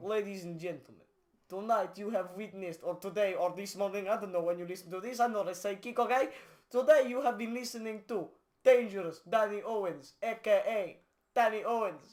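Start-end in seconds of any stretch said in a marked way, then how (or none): 0.0-6.3 fake Russian accent, faster pace. Closing the podcast with a sign-off to listeners, in a fake Russian accent. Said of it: "the Russian accent now".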